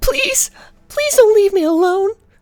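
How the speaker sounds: put-on shrill small girl's voice, very high and loud. A game narrator voices what the players hear as they leave: small girl's voice. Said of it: "which sounds like a small girl's voice".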